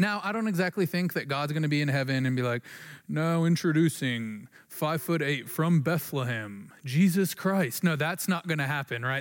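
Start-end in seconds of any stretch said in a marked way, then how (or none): 3.1-7.8 clumsy, bad game show host announcer voice. Imagining God introducing Jesus Christ, in a really poor announcer's voice. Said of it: "sorry for my really poor announcer's voice".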